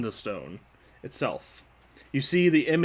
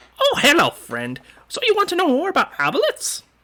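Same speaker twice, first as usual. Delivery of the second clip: very high, cheery, swooping helper voice; 12 semitones higher, 6 dB louder than usual. A magic stone answers a question about aboleths: Clippy-style assistant voice. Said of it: "this is one of those uh those Clippy clones".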